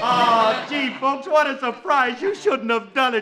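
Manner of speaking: fake, very surprised tone. On the phone, a guest acts out his reaction to the surprise party: fake surprise. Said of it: "I'm going to act very surprised".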